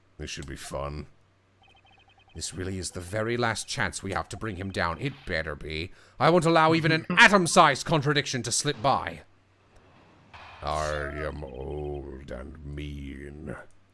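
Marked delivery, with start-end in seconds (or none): 5.0-13.6 deepest possible put-on voice, slow, stretching "old". Performing a character's lines, in the deepest voice possible. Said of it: "Is this about the deepest voice I can do?".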